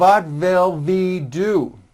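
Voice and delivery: slow German-accented V replacing W in "what". Showing how some learners wrongly say W as V: imitating German-accented V for W. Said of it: "they may say".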